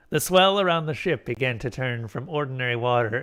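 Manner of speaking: plain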